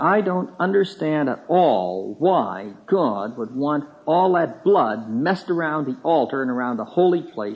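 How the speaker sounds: bitter, strident, complaining tirade. Speaker retelling what a lady said, mimicking a strident, bitter tone. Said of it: "a very strident and bitter tone".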